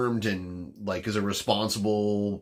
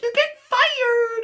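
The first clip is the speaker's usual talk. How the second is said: shrill, very high, loud yell; 7 dB louder than usual. Imitating a podcast guest's catchphrase: imitating Amanda's high voice. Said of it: "I can't do that high a voice".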